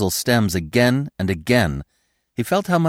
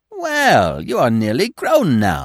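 cheery, friendly, sing-song voice; 2 semitones higher than usual. The squirrel, sitting close by, speaks to Bambi in a cheerful voice. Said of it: "said a cheerful voice close by".

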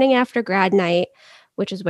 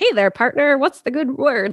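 put-on dated, old-timey forties picture-show style voice; 4 semitones higher than usual. Retelling Stevie arriving in a high mood: imitating an old-fashioned 1940s greeting. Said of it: "Like it's nineteen forty-two or something".

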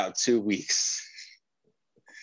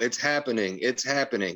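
ordinary delivery

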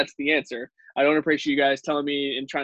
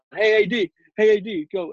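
acted very slow, repeated, high, drawn-out hollering; 7 semitones higher, 4 dB louder than usual. Retelling how Dante Dion yells at Aaron Donald: imitating Dante Dion yelling. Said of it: "he's yelling at Aaron Donald".

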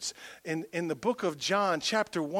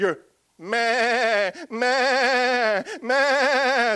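drawn-out bleating meh like a sheep; 7 semitones higher, 10 dB louder than usual. Preaching about people stuck in their past, doing a sheep bleating impression. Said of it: "It's my best sheep impression".

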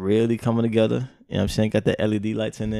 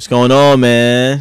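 speaking loudly, louder; 2 semitones higher, 12 dB louder than usual. Greeting the other speaker at the start, loud voice. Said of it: "Why you so loud?".

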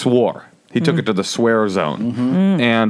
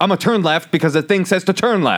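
play-acted, snappish, pitched-up delivery; 8 semitones higher than usual. Retelling how the driver snapped about the turn: imitating a driver snapping. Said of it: "he kinda snaps at her".

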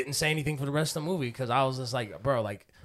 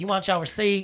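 higher put-on brash girl voice; 7 semitones higher than usual. Retelling the gas station girl asking about a receipt: Woah Vicky voice. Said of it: "She kinda talked like, uh, you know that, uh, celebrity, like, Whoa, Vicky?".

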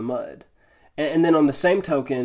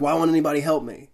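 mock frustrated, self-pitying whining tone. Retelling being stuck in snow while people walked by: imitating own self-pitying complaint. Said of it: "that self-pity victim mentality".

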